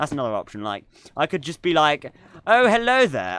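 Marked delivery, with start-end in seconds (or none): 2.4-3.4 deliberately posh put-on accent, pitched up. Imagining a whole live stream done in a purposefully posh accent. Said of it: "like purposefully posh accent".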